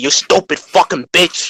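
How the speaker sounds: put-on New York accent, shouting. Retelling a dream clown's insults: imitating a clown's new york accent. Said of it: "this clown in a New York accent".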